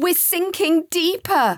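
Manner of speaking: loud, high-pitched shout. Narrator reading Joseph's line to Sam, shouted. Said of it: "he shouted to Sam".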